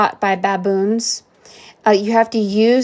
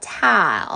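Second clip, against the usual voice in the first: tile pronounced with a put-on Southern accent; 3 semitones lower, 4 dB quieter than usual. Retelling a woman correcting a misheard word: imitating a southern accent. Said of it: "'cause she had a Southern accent".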